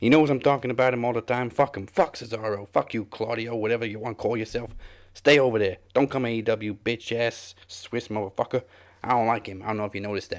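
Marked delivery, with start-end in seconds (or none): 0.0-9.6 put-on straight-up New York, Yonkers-style accent. Reading out a wrestler's statement in his accent, for a friend: Eddie Kingston's accent. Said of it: "read out that statement on Cesaro in his accent".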